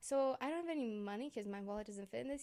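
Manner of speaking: ordinary talk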